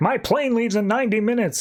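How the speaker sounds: very high-pitched yell. Retelling a cab passenger in a flooded city, imitating a passenger yelling. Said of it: "this guy just yelling in".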